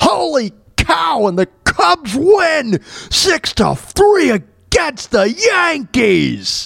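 very high-pitched exclamation, every word dragged out. Joking while reacting to a video: Harry Caray voice. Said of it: "'Cause like Harry Carey".

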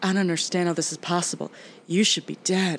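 put-on scared movie-style voice. Retelling a movie lab scene on a podcast; imitating Jennifer Connelly scared. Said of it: "And she's just so scared".

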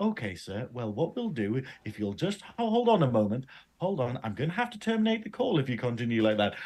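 sunny, sweet, cheerful, polite voice. Imitating someone being screamed at on a call: imitating a sunny, cheerful tone. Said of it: "all sunshine and rainbows talking to them".

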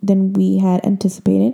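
ordinary talk, nothing marked

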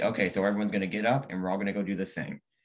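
ordinary talk, nothing marked

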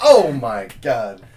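put-on booming, very loud cry, nearly cracking up. Retelling how an actor said the line in a deleted scene: imitating someone almost laughing. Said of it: "you could tell he was almost on the verge of laughing".

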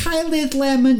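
very high, shrill, put-on ditzy young woman voice.

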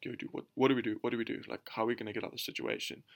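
hushed, breathy whisper, barely voiced. Retelling a cousin's words while hiding from a guard: imitating someone whispering. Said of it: "just whispering to me".

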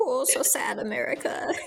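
slow, drawn-out, weepy, tearful crying voice. Retelling how people posted drawings of their pets: imitating someone crying. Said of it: "crying, being like".

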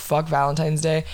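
ordinary delivery

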